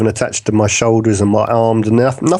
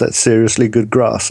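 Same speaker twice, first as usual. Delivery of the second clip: plain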